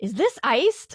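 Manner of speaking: put-on seething, furious, boiling-over tone. Retelling a wait for a late drink: imitating own furious question. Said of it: "my blood starts boiling".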